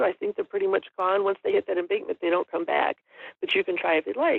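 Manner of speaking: ordinary talk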